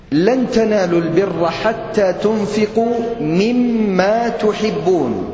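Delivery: ordinary talk, nothing marked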